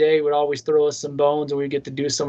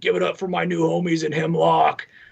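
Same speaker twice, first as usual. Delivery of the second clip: heavy guttural voice pushed from the throat; 2 semitones higher than usual. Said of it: "real heavy guttural voice".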